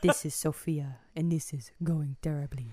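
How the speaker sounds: put-on very low, soft elderly woman's voice. Asked to do a version of how Sophia sounds, the speaker does a low-voiced Sophia impression. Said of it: "She has a very low voice".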